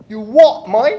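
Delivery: put-on English accent. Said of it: "English accent, Abby".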